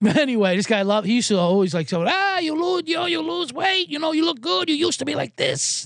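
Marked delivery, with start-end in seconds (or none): 2.1-5.9 very high-pitched put-on Korean accent. Retelling what a paired-up player at the course used to say: imitating a Korean accent. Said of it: "I don't wanna do the accent".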